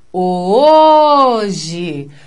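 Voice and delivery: stressed, held first syllable ho in hoje. Teaching how to find the stressed syllable, long first syllable of hoje. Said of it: "a sílaba tônica é o O do hoje".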